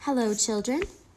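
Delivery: sweet-voiced, speaking sweetly. Reading a story aloud, voicing Miss Nelson greeting the children: sweet voice. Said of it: "someone said in a sweet voice".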